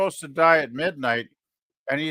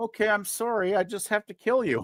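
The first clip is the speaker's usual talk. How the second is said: polite, gentle voice, pitched a bit higher; 7 semitones higher, 3 dB quieter than usual. Reacting to a scene, imitating Death: polite, gentle Death voice. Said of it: "he's very kind and, and gentle and like".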